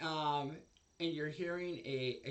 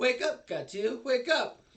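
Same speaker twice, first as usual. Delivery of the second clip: happy chipper female voice, higher and louder; 7 semitones higher, 10 dB louder than usual. Voicing an unknown woman waking a player's character: Brigitte from Overwatch voice. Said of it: "a female voice that sounds exactly like Brigitte".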